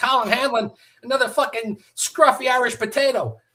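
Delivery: put-on yelling. Retelling being greeted at the firehouse: imitating someone yelling. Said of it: "he's fucking yelling at me".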